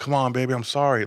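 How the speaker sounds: coaxing, sweet-talking, pleading delivery. Retelling a video of an inmate apologizing to his girl: imitating an inmate sweet-talking his girl.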